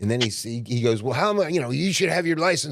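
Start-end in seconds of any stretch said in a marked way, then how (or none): 1.0-2.7 pitched-up, shouted, yelling cop voice. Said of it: "he's yelling at me".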